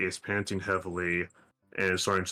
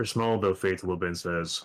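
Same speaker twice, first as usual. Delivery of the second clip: ordinary delivery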